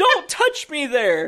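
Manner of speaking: mock, shrill scream at the top of the lungs. Suggesting what to do when someone calls you racist: screaming at top of lungs. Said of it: "just screamed at the top of your lungs".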